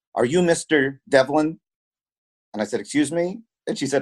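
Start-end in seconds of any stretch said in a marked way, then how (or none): 0.1-1.5 put-on Serbian accent. Retell a nervous young woman and her mother approaching your table in Serbia, in a thick Serbian accent. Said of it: "in a thick Serbian accent asked me".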